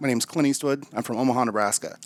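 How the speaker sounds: ordinary talk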